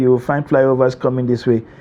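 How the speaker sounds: ordinary delivery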